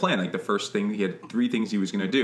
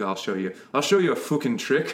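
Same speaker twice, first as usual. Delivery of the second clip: put-on drunken brogue, slower; 4 semitones higher than usual. Retelling a scene where a man shows a coin trick, in mock-drunken Mad Sweeney brogue. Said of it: "with his drunken brogue".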